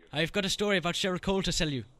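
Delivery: quiet put-on Irish accent. Caller claiming to be Louis from X Factor, in a fake Irish accent. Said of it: "It's quite a good accent".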